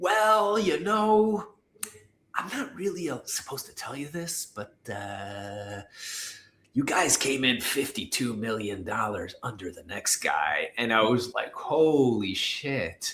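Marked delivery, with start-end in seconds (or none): 0.0-10.7 hushed, lowered, confiding voice, "uh" drawn out. The speaker quotes a man confiding in them about a bid; retelling a lowered voice. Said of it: "I hear him like lower his voice".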